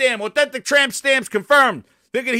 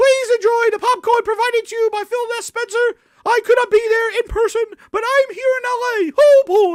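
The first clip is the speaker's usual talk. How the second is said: very high-pitched cartoon mouse voice; 10 semitones higher than usual. Imagining Phil Spencer greeting a theater audience from the screen, Mickey Mouse voice. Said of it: "he is friggin' Mickey Mouse".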